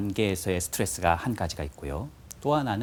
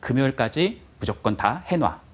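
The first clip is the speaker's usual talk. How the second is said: unpleasant, rude and bossy, said slowly; 4 semitones higher, 4 dB louder than usual. Example of someone giving an order in an unpleasant way: mock rude order. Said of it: "이렇게 기분 나쁘게 말하는 사람이 있어요".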